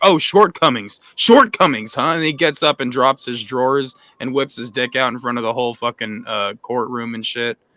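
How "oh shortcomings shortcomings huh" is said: loud, angry, riled-up, pissed-off tone. Retelling a defendant's reaction in a TV courtroom scene: imitating an angry outburst. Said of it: "he gets all pissed off".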